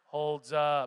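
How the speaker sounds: mock flat, lifeless voice. Speaker mocks the audience's response to his prompt, imitating a lifeless reply. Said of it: "It was like lifeless and".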